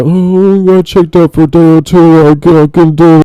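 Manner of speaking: solemn, slow delivery. Mocking another speaker's words: imitating a somber tone. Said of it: "really somber".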